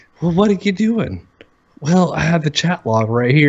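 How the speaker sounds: mock flat monotone voice. Telling a friend how funny To Catch a Predator is, do a monotone Chris Hansen voice. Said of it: "so monotone voice".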